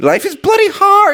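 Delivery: whiny, crying wail. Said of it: "back to the whiny, crying Percocet addict".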